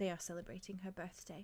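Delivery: very soft, hushed murmur, close by. A game master voices Calypso standing beside the player, very softly. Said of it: "she just very softly says".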